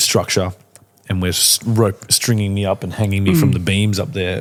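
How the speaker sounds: ordinary talk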